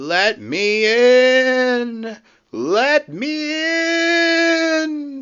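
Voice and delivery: very high, very slow, drawn-out, ghostly and eerie. Narrating a story as Percy reaches the shed doors, in Percy's spooky voice. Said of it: "said Percy in his spooky voice".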